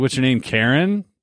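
ordinary talk, nothing marked

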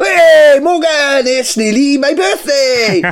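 very high, bubbly, happy, with drawn-out hey. Showing off different moods on cue, happy tone.

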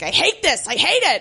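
put-on small, held-back mild yell. Retelling a scene where a boss walks away: imitating a mild yell. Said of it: "he does yell a little bit".

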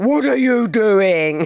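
slow, booming, big put-on man voice. Throwing the window open at people on the lean-to, the speaker shouts: boomy man voice. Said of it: "Like that, in my best boomy man voice".

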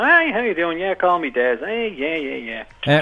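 fake-friendly, overly casual, chummy, fake-nice patter. Retelling how a killer approached young lads: imitating Dennis Nilsen, putting on friendliness. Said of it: "he would approach little lads and go".

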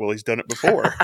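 muttered under the breath. Recapping a scene, quoting what a man said under his breath. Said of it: "under his breath".

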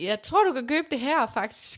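ordinary talk

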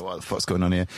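ordinary delivery

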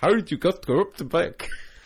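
put-on Dutch accent, old man, high and loud. Imitating a dutch grandfather asking directions, after being urged: put-on dutch accent. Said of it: "do his bits in the voice".

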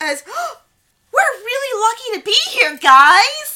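giddy, very high and loud, guys stretched. Recalling what was said to the group, the speaker retells Zach's words: imitating Zach giddily. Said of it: "giddily says".

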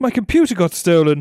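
affected upper-class voice. Reading a passage aloud that can only be read in a put-on posh voice. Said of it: "I can only read in a posh voice".

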